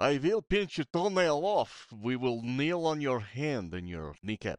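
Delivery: put-on Russian accent on English. Still quoting the doctor while friends tease you, in a Russian accent. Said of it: "You're still doing a Russian accent".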